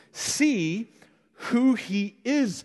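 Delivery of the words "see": see stressed, pushed higher and drawn out. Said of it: "I keep emphasizing that word".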